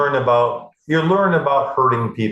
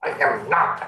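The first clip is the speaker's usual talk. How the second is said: put-on whispered, breathy little-kid voice, protesting tone; 4 dB quieter than usual. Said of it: "you sound like you're eleven years old".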